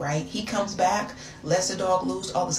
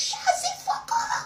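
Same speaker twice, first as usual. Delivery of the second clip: put-on French accent, very high and slow. Retelling shouting at him while still in a French accent. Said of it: "I still had the accent".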